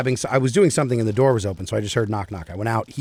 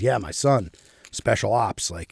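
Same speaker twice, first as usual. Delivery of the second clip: put-on muttering voice. Retelling what the neighbor said about his son: imitating someone muttering. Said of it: "he was, like, muttering".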